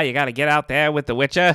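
accent from Maine. Friend jokes that the word Witcher sounds like Maine: Maine accent. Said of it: "it sounds like you're from Maine".

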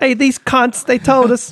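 very high, terrible put-on British accent. Imagining a British couple retelling the story: terrible put-on British accent. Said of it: "my accent's terrible".

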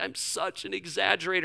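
bawling, sobbing, tearful crying words. Recalling bawling while feeling convicted, retelling words said through tears. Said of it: "I'm like saying this through the tears".

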